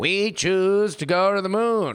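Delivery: strange, high, slow, cartoonish voice. Quoting a famous moon speech: Kennedy voice. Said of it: "very Simpsons-y voice".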